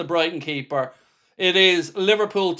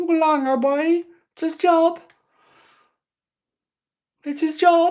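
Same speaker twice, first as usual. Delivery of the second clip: very high-pitched Cork Irish accent; 10 semitones higher than usual. Irish speaker trying out a Cork accent while quoting someone, Cork accent. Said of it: "how can I do a Cork accent?".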